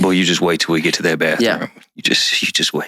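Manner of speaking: mock threatening whisper. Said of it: "in public, the whisper".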